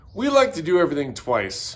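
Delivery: ordinary delivery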